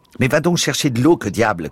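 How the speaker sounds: loud, high shouting. Shouting at another man as a wounded man faints; shouted. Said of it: "cria Bazarov".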